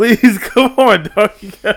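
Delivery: very high, very loud laughing through words, pleading. Asking a friend to keep going after interrupting: laughing while talking. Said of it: "we got the giggles now".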